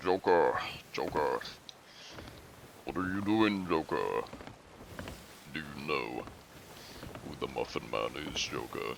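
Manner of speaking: put-on rasp, gravelly voice on every line. Trying out a Batman voice talking to the Joker, raspy Batman voice. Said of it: "I can do like a, a Batman raspy voice".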